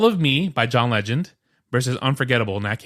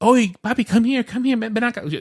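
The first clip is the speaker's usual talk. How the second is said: very high-pitched calling voice; 10 semitones higher than usual. Retelling how his mom called him over: imitating his mom. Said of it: "anytime I imitate my mom".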